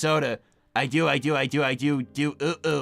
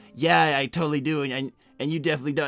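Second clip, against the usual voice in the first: ordinary talk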